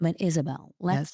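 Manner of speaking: low public-radio announcer voice. Playing therapist to Isabel, NPR voice. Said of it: "go into the N P R voice".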